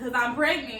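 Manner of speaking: usual speaking voice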